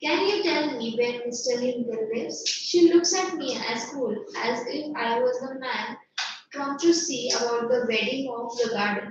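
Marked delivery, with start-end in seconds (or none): none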